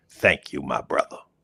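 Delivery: relaxed, cool, laid-back cool-guy tone. Retelling a man answering a question about directions: imitating him saying it cool. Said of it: "He even said that cool".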